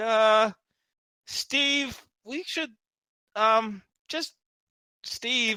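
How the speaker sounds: nervous, jittery, hesitant, high-pitched, very slow. Voicing friends urging their companion to back down: nervous voice. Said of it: "really nervous".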